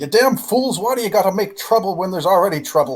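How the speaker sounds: very high, shrill, furious angry shouting. Voicing the dwarven barkeep as he yells out mid-scene: yelling dwarven barkeep. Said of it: "barkeep just sort of yell out".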